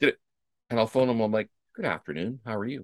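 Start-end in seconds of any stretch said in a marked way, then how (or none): 1.8-2.8 deliberately calm, very soft and quiet polite tone. Speaker retelling phoning someone who sent sixteen texts, with a put-on calm greeting. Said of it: "as calmly as I can with intention".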